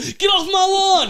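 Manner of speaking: very high, shrill, slow, drawn-out yelling. Telling a story about a man whose tower is surrounded by skyscrapers, imitating someone yelling. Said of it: "he's just yelling at people".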